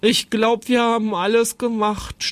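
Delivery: exhausted groan. Narrator reading Jonathan's line, lying in the grass after the fair: groaning. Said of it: "stöhnte Jonathan".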